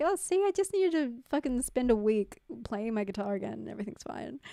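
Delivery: ordinary delivery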